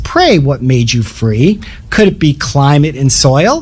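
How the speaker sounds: rather haughty, lofty, superior tone. Retelling a debater's rebuttal to an opponent's argument, retelling a haughty reply. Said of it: "comes out rather haughtily and says".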